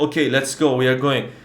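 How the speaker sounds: ordinary talk, nothing marked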